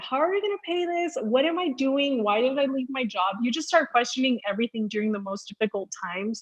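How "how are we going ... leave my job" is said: put-on crying, tearful and pleading. Retelling a tearful phone call to her husband: retelling her own crying words. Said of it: "I call my husband crying".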